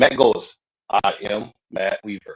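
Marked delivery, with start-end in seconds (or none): 0.9-2.4 low, slow, flat deadpan monotone with pauses. Asked about their skit, speaker imitates Matt Weaver's monotone. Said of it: "he does the monotone".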